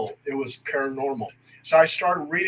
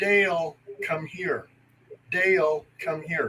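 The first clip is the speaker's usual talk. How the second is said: put-on woman's voice, calling out; 4 dB quieter than usual. Retelling a woman's voice from the orange grove: imitating a woman calling out. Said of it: "a woman's voice that sounded like my mother was calling me".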